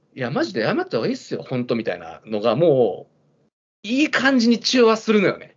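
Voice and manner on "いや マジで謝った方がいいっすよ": fast, chuckling, half-laughing, half-joking delivery. Retelling what someone said to the speaker, imitating someone half-laughing. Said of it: "高橋さんが半笑いでさ".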